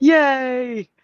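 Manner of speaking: put-on happy voice. Retelling how a character acts on coming back: imitating a happy character. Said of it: "he's, like, all, like, happy".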